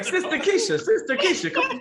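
very high, laughing, sing-song calling voice.

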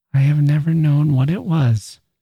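whispering. A woman speaks to the narrator after hearing his lie; whispered. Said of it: "she whispered".

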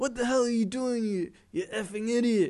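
mock yelling. Retelling how other drivers at a petrol station yelled at them, imitating someone yelling. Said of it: "started yelling at me like".

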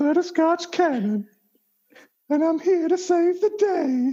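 low, seductive, sultry voice. In a role-play, the character introduces itself to the group: sexy Butterscotch Cannon voice. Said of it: "You have a very sexy voice".

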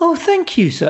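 put-on French accent, high-pitched. Retelling a cashier's reply after he praised her shop, in a french accent. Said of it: "in a French accent".

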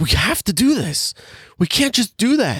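fed-up, exasperated delivery, pitched very high. Describing an actor's usual movie line reading, a mock-exasperated Chris Pine impression. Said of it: "his regular character of exasperated line reading ... That's my Chris Pine impression".

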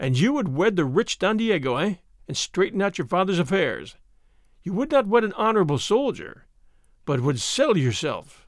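ordinary talk

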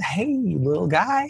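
very high, gentle, soft, excited voice. Showing how one talks to a child: soft and excited, as to a child. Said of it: "we're gonna talk really soft and excited".

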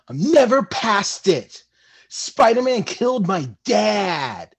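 dramatic, heavy angst, "dad" drawn out. Asked to repeat a line with a little more angst, heavy dramatic angst. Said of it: "Can you say that with a little bit more angst?".

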